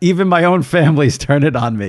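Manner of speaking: plain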